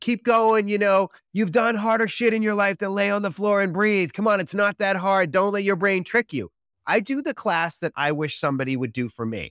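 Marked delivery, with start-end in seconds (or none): 0.0-6.5 high, edgy, pushy coaching holler. Describing how they coach their breathwork class, acting out yelling coaching. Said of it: "I'm yelling things like".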